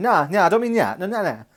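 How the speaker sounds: loose, tipsy, after-a-few-drinks talk, acted out. Imitating the other speaker after a few drinks: imitating someone tipsy. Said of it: "when you have a few drinks and you sort of say".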